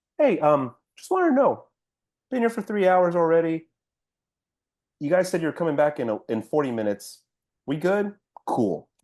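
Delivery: nice, easygoing, calm, polite tone. Retelling asking er staff about a long wait: imitating own calm polite asking. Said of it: "I was like this".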